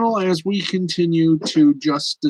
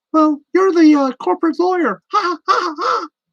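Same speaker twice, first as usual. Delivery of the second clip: put-on high-pitched cartoon mouse voice; 13 semitones higher, 5 dB louder than usual. Doing a scene between two cartoon characters: Goofy voice. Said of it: "the best Mickey Mouse and Goofy I, I can do".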